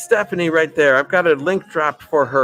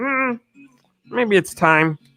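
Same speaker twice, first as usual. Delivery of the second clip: high, pitched-up cartoon puppet frog voice; 6 semitones higher than usual. Retelling a passing thought about the viewer count dropping: Kermit the Frog voice. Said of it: "I just sounded like Kermit the Frog there".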